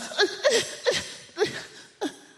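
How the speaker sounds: very high, flustered, fumbling stammer. Telling a story about a woman on a train who gets called out: imitating flustered stammering. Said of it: "she gets flustered".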